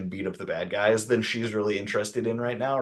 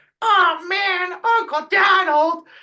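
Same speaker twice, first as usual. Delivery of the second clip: high-pitched, loud, whiny cartoon voice; 10 dB louder than usual. Complaining about the original DuckTales, the speaker mimics a high, whiny Huey Dewey Louie voice. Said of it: "this high, whiny, like".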